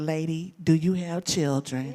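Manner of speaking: ordinary talk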